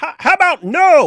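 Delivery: high, loud, blurted, mocking delivery.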